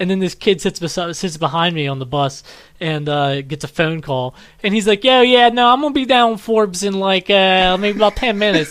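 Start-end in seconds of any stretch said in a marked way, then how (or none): 5.0-8.7 put-on high, mixed rural and Philadelphia accent. Retelling a kid on the bus taking a phone call, in a rural-philadelphia mixed accent. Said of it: "weird mix of like like. rural and Philadelphia accent".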